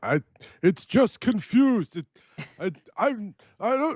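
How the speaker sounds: shrill, very high, stammering, broken yelling. Voicing what a character will say when asked about it: yelling out. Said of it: "he's gonna yell out".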